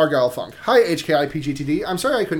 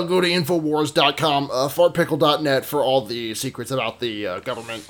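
put-on broadcaster host voice; 2 semitones lower than usual. Doing a quick impression when asked to: Alex Jones impression. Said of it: "do your best Alex Jones impression".

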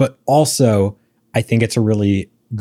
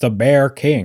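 bad fake Scottish accent, slower pace; 2 semitones higher than usual. Speaker discussing the story's villain dad, doing a bad scottish accent. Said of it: "That was not a Scottish accent".

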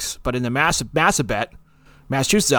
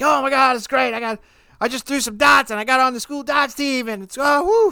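put-on, very high, thrilled, gushing babble; 12 semitones higher than usual. Retelling excitedly telling a roommate about making the darts team: imitating own excited speech. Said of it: "And I was all excited".

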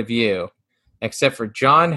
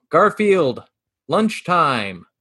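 called out with voice pitched up; 5 semitones higher than usual. Describing a comic panel where John yells: yelling as John. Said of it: "John is yelling".

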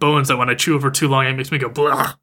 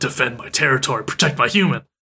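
put-on excited dog voice. Retelling how the dog gets excited at the window: imitating Muko getting excited. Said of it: "while Muko's getting all excited".

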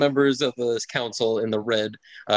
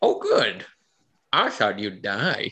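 put-on slow, drawn-out, swooping, sing-song old-man voice. A narrator voicing the character Aldo's reply, in Aldo's character voice. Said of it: "Aldo says".

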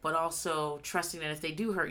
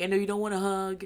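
weepy, teary-voiced, crying; 4 semitones higher than usual. Retelling what a daughter says to her staring mom: imitating someone crying. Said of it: "crying and stuff".

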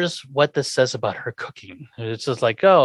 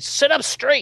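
mock, shrill, very high yelling; 13 semitones higher than usual. Retelling a TV scene where Lily yells at Eddie: imitating a yell. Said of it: "yelling at Eddie again".

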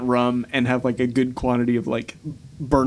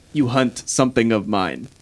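sinister, malicious, menacing dragon voice. Voicing an ancient red dragon speaking into a character's mind: sinister, malicious dragon voice. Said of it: "you feel this, like, sinister malice".

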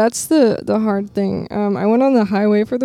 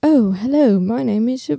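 posh, upper-crust British accent; 2 semitones higher than usual. Listing different kinds of British accents, in a posh British accent. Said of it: "And then there's the um like posh".

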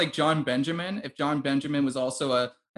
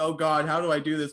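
imitated panicky freaking out. Retelling how a disguised character reacts to a cigarette challenge: imitating someone freaking out. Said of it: "this guy is just, like, freaking out".

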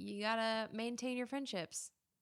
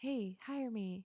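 slightly 1-900 phone-line style voice. Joking about sending radio tapes out, pitching herself in a bit 1-900 voice. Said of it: "that was a little bit 1-900 on that one".

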